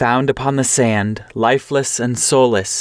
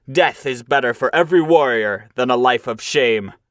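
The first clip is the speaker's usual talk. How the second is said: crying out, angry, scornful. A warrior turns on the cowards who fled, crying out in anger. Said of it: "Then [name], sorrowful in soul, looked with anger at the cowards. No soft words had he for the craven-hearted crew. / he cried".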